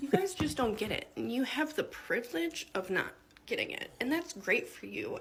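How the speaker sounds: voice on the edge of crying, holding back tears. Explaining something while trying not to cry: holding back tears. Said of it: "I'm gonna try to explain this without crying".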